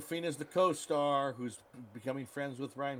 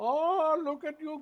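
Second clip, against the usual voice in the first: put-on Dutch accent, much higher pitch; 14 semitones higher, 6 dB louder than usual. Comparing an actor's Dutch accent in a movie, in a Goldmember accent. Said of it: "It's almost exactly that accent".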